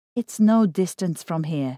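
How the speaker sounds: ordinary delivery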